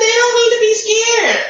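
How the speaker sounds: mocking, sarcastic tone. Talking about strong feelings toward other people: sarcastic.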